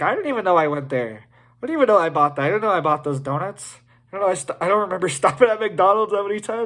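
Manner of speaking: alarmed, freaked-out voice. Imagining a bank app tracking their carbon footprint, acting freaked out. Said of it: "I'd be freaked out. I'd be like".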